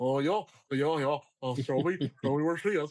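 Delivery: country bumpkin cartoon wolf voice. Imitating the country bumpkin wolf from a cartoon: country bumpkin wolf voice. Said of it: "the country bumpkin wolf".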